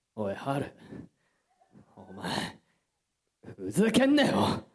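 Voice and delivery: measured, deliberate delivery. Doing an impression for the others who have their eyes closed: imitating Miyano. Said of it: "モノマネというモノマネをやってない".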